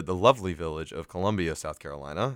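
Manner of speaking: laying on heavy, tongue-in-cheek sarcasm. Announcing where a basketball game will be played: sarcastic tone. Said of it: "I hope you heard that sarcasm in my voice".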